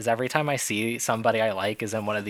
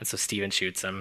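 plain

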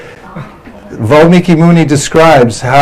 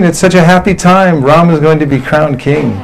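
ordinary delivery

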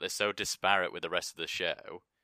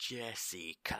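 drawn-out "jessica", quieter; 3 semitones higher, 7 dB quieter than usual. Recalling a slow-motion scene, imitating how he says Jessica. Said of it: "I hate the way he says Jessica".

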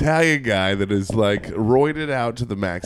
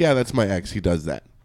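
mock-nonchalant, casually indifferent voice, much lower; 3 semitones lower than usual. Retelling how she answered the question about the man, mock-nonchalant retelling. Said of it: "She just says it so nonchalant".

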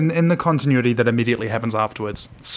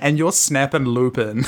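plain

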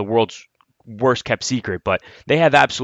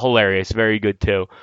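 ordinary delivery

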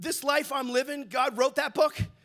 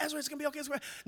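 gentle, soothing, reassuring, calm tone; 2 semitones higher, 8 dB quieter than usual. Retelling consoling a grandson who fell and was screaming: retelling consoling a screaming child. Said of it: "nothing I could do to console him".

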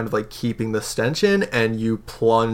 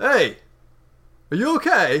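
very high, swooping shouted call; 10 semitones higher than usual. Voicing a guard who calls across the river: guard shouting across. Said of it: "this guard kind of shouts across".

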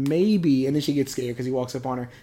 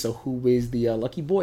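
ordinary talk

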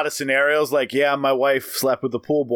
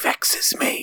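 bad, breathy, would-be sultry, suave whisper. Imagining a reply to a comment, in a whispered Ricardo Montalban voice. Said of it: "The worst Ricardo Montalban. I just got the whisper down".

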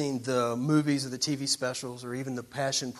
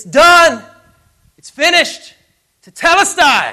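booming, very loud, very high, drawn-out shout; 20 dB louder than usual. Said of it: "as loud as he can".

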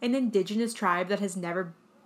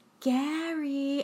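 mock coy, flirty, high call with one word drawn out; 7 semitones higher than usual. Retelling how a character said a name: imitating a flirtatious voice. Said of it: "very flirtatiously goes".

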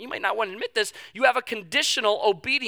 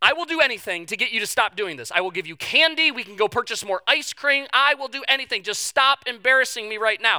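usual speaking voice

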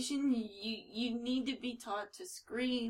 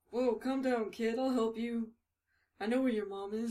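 goofy put-on creepy stranger voice. Voicing a comic's creepy stranger luring a kid: creep in Rodney Dangerfield voice. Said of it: "this guy kinda sounds like, um, Rodney Dangerfield's character".

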